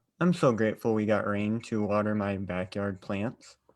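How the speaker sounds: ordinary delivery, nothing marked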